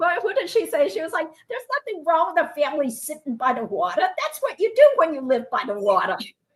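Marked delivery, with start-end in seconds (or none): 1.5-6.2 put-on New York accent with sing-song intonation. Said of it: "I can't do it justice".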